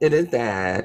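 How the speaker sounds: taunting, mocking voice copying another's way of talking. Arguing back while mocking the other speaker's voice: mocking someone's voice. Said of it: "You don't have to mock my, my voice".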